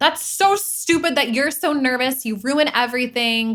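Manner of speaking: play-acted angry scolding yell. Acting out scolding a kid scared to go on stage: imitating someone yelling at a kid. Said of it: "yelling at them".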